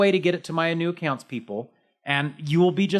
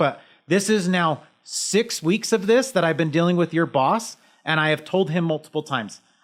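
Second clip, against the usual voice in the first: plain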